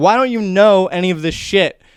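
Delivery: berating scream. Speaker retelling a guy who started screaming at him, retelling someone screaming. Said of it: "he just started screaming at me".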